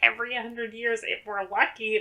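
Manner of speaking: high-pitched, whiny voice. Retelling an actress's line from the end of a movie: imitating Shelley Long's whiny voice. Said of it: "the whiny voice when she was like".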